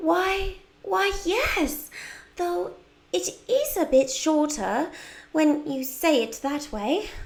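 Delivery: put-on high-pitched British accent. Voicing Wendy's lines in a story, do a British accent as Wendy. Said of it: "I love doing the British accent for Wendy".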